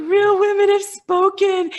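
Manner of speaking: play-acted loud, very high, tear-choked sobbing. Retelling seeing the sold out sign: imitating own sobbing. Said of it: "I'm, like, sobbing".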